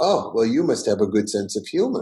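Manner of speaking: put-on Russian accent. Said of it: "a real Russian who talk like this".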